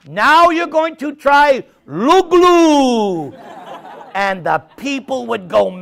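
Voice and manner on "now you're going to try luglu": put-on slow, heavy Latin accent with "luglu" dragged out. Retelling a companion's announcement to the people, in Viprahita's heavy Latin accent. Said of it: "he had a very heavy Latin accent".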